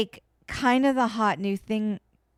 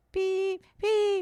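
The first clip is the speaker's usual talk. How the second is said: high, mock smoke alarm beeps. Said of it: "It pulsed, like".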